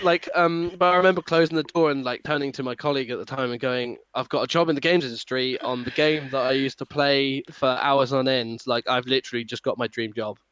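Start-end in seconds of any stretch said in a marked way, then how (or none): none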